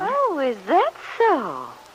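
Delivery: surprised, high swooping tone, genuinely taken aback. Hearing that a man is thinking of staying on in Wakefield, reacts surprised. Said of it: "You sound surprised".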